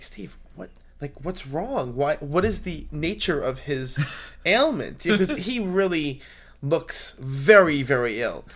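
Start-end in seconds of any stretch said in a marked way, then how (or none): 0.0-5.0 discreet, hushed half-whisper, kept soft. Retelling asking someone about a sick man's ailment: retelling a whisper. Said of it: "I kinda whisper to Steve".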